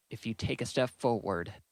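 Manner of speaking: ordinary delivery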